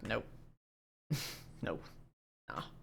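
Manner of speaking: mock flat delivery. Game master describing a chained prisoner's reaction to the players, acting out a prisoner refusing. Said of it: "he was the one that was like".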